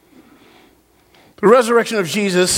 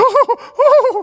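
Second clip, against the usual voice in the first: very high, loud panicked cry yelped out. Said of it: "and everybody's like".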